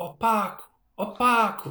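high, acted-out calling shout. Retelling how Jesus called out in training and nobody answered, imitating someone shouting. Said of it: "o Jesus começa a gritar".

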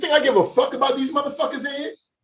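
very loud, shrill, very high-pitched yell. Retelling an argument where the speaker's kids were involved, retelling a loud outburst. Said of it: "I got real loud".

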